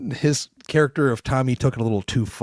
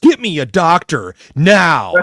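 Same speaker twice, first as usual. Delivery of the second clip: very loud, very slow, drawn-out, furious top-of-the-lungs scream; 4 semitones higher, 9 dB louder than usual. Retelling a character screaming at hospital staff: imitating a scream at top of lungs. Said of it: "scream out at the top of your lungs".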